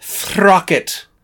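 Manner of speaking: British stage-actor accent. Joking about a character's name with another speaker: British stage actor voice. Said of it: "I'm gonna say it like a British stage actor".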